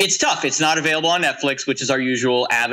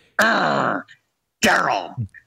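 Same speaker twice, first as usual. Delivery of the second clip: imitated growling voice; 2 semitones higher than usual. Retelling how the trailer said the boy's name: imitating a growled name. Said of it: "like he's growling".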